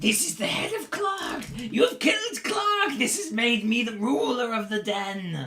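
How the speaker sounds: very high, loud, gleeful, crowing goblin voice. A game master voices the goblin who is now ruler of the den: very happy goblin leader. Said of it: "He's very happy about the whole thing".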